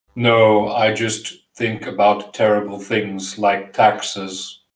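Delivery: put-on flat, low, monotone German accent. Answering a question while in character, in a monotone german accent. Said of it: "your monotone German voice is actually slightly terrifying".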